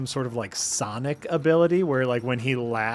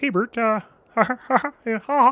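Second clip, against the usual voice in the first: higher-pitched puppet voice, chuckling throughout; 9 semitones higher, 4 dB louder than usual. Doing Sesame Street impressions a chat viewer asked for: Ernie voice. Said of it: "Ernie is very Kermit".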